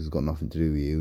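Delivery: plain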